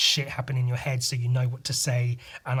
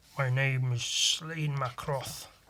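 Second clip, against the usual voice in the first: slow, deliberate put-on Scottish accent; 5 dB quieter than usual. Trying out accents with a jumping-off phrase, in a Scottish accent. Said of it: "That's Scottish".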